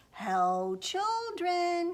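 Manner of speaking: sugary, honey-sweet, sweetened-up fake voice. Reading a story, the wolf calls through the door to the children, honey-sweet voice. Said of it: "he said in a honey-sweet voice".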